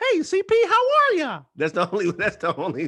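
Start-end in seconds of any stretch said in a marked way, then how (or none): 0.0-1.4 high squeaky voice, loud and slow. Speaker offers the only impression he has, Mickey Mouse impression. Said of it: "only impression I got is Mickey Mouse".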